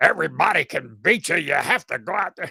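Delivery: terrible put-on announcer voice. Quoting the school of thought the speaker is from: terrible Larry Munson impression. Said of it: "That's a terrible impression".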